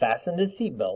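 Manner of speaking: ordinary delivery, nothing marked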